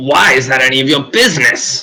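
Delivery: loud scream from far off. Voicing a character who screams back from the other side of the room. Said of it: "he screams back from the other side".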